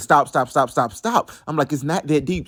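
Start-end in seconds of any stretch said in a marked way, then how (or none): 0.0-1.3 mock yelling, acted out. Recounting a fight in the front yard, retelling yelling stop. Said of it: "I'm yelling".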